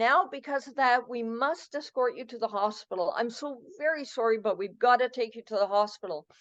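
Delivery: ordinary talk, nothing marked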